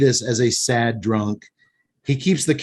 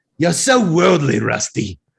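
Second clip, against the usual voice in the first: put-on bad, gravelly, drunken-sailor Australian accent; 2 semitones higher than usual. Trying an accent to quote a woman's line to her driver; bad Australian accent. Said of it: "you just sound like a drunken sailor".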